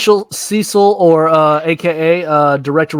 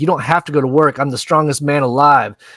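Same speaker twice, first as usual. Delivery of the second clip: ordinary talk, nothing marked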